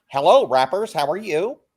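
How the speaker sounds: classic put-on boy voicing.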